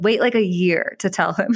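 ordinary delivery

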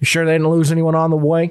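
put-on country yokel voice, rural Southern farm-boy accent. Game master voicing a Southern farm-boy character in a role-playing game, Southern farm-boy yokel voice. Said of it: "looks like just some farm boy yokel. ... He's also just Southern".

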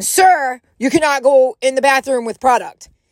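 severe, stern, firm tone. Retelling what a checkout attendant said to a man, imitating a stern lady. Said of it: "the very stern, older-looking lady".

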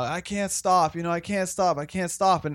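mock crying, tearful bawling sobs through every word. Retelling a woman's words to him about not being able to stop, imitating someone bawling. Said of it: "bawling her eyes out".

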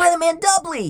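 very high, exclaimed line. Roach reacts to an incoming transmission from doubly, exclaiming. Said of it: "Roach exclaimed".

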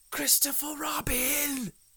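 stage whisper. A character up by the honey calls down to christopher robin in a loud whisper. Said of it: "he said in a loud whisper".

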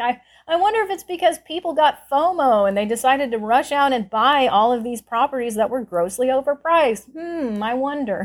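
wry, mock-wondering sarcasm. Retelling what a man said about overpriced properties, mock-sarcastic musing. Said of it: "Like sort of sarcastically musing".

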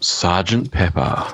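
put-on hoarse, husky delivery. Continuing his running bit of naming an album in a husky voice. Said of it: "just say the name of the album in a husky voice".

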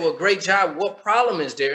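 usual speaking voice

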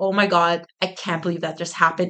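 normal talking voice

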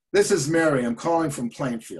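very gruff, rough-edged voice. Retelling a phone call from an award winner introducing herself, gruff Mary impression. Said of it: "Very gruff".

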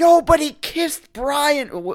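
imitated hoarse voice. Imitating someone whose voice was always hoarse: hoarse voice impression. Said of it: "his voice was always like".

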